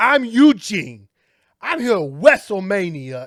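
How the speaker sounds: loud, slow, high, drawn-out nursery-rhyme sing-song. Imitating how the wrestler Eugene talked when he came out: Eugene impression. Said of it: "and he talked like this".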